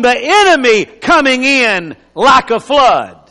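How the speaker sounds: "enemy" hit hard, "flood" trailing off.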